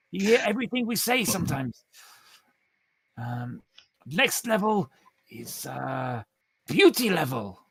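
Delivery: put-on character voice, Spanish accent. Voicing the game character Pedrito announcing the next level, slight Spanish accent. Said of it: "I've gone for a slightly Spanish accent".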